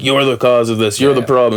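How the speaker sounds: usual speaking voice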